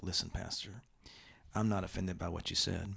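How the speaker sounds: soft, hushed, quiet-voiced aside. Retelling a churchgoer approaching the pastor after an edgy sermon, imitating a quiet voice. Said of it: "they kind of in a quiet voice like".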